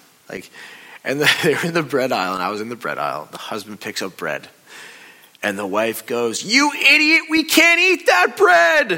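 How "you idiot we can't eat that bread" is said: put-on piercing, shrill, very loud old-lady screech. Speaker retells a wife in the bread aisle yelling at her husband, retelling a scream. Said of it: "And she just screams it".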